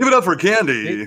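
cheap strip club announcer voice. Picking up a suggested bit, doing a low-rent strip joint announcer voice. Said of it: "low rent stripper strip joint announcer guy".

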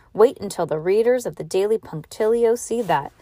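plain reading voice

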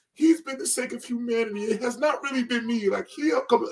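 bawling, tearful, very high-pitched sobbing plea. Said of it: "crying and bawling".

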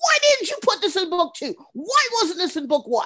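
play-acted, very high, shrill, exasperated, frustrated yelling. Retelling listening at work to an audiobook: imitating own yelling. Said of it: "I'm yelling at my iPod".

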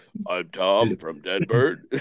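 deep mock voice.

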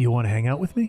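throaty, secretive, conspiratorial leaning-in tone. Retelling a man who puts his fork down and leans closer to someone, mock-conspiratorial, from the throat. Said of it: "conspiratorially puts the fork down and moves closer to Rosie and goes".

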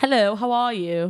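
put-on English accent. Asked whether they can do a british accent, greeting in a british accent. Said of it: "Can you do a British accent?".

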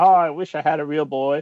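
doleful, sad, longing and wishful. Retelling the Disney cartoon, mocking the father who is sad: imitating Geppetto, mock sad. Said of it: "he's sad and he's like".

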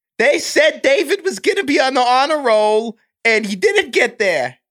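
put-on elderly grandmother voice.

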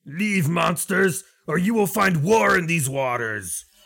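very high hollered yell. The one in front yells a warning from a hundred feet away, yelling. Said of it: "the one in the front will yell".

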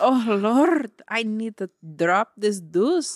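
loud, clumsy, put-on Irish accent. Improvising a gym bathroom scene in an accent game, attempted Irish accent. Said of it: "Irish accent".

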